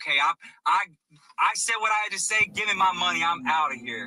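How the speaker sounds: acted-out reluctant, grudging, unhappy, done-with-it tone. Retelling how a woman responded to Jake, imitating her reluctant, unhappy reply. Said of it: "she was not happy about having to do it".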